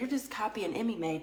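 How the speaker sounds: ordinary talk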